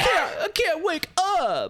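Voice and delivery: very high, sing-song, swooping whiny wail. Retelling how he mocked her for being dead, in a mock-whiny voice. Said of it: "but he said it much more whiny".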